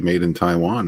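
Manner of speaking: usual speaking voice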